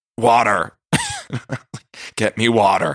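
drawn-out delivery with a swooping pitch. Retelling waking up hungover: Luann in the Berkshires voice. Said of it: "total Luann in, uh, the Berkshires voice".

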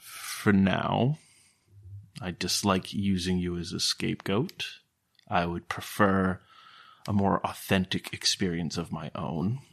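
very hushed half-whispered words. Salash speaks again without trying to alert anybody, in a hushed half-whisper. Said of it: "Very, very hushed tones, ... very whispered".

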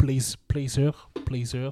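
poorly done, unconvincing English accent. Trying to say an english film title: bad english accent. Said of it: "j'ai un accent anglais dégueulasse".

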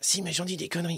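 small little voice. In a comedy sketch, answering a follow-up question: small little voice. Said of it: "c'est cette petite voix tout le temps".

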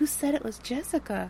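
put-on high, soft baby voice. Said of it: "And she's got this, like, very, like".

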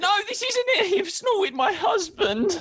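very high, tearful, sobbing wail. Retelling a woman's upset reply, imitating someone crying. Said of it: "She's like crying her eyes out".

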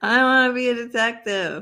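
slow, with every word drawn out. Repeating the line on request, imitating Carrie. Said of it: "Do that again".

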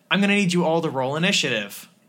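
ordinary talk, nothing marked

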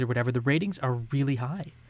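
ordinary delivery

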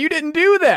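accusing shout. Retelling what another speaker said earlier: imitating someone yelling. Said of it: "You yelled at me and said".

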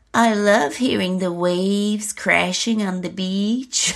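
high-pitched, lilting voice with vocal fry. Retelling what a woman on camera tells a man, in a lilting, high-pitched, fried voice. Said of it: "now lilting, high-pitched and fried".

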